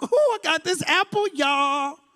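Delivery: hyped-up, turned-up call-out. Retelling a woman in the garden with an apple: imitating a turned-up woman. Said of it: "she turned up in the garden like".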